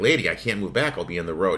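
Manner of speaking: ordinary talk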